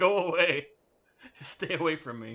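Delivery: moaned words with groaning throughout. Voicing what the staring people are groaning: groaning. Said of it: "That's what they're groaning".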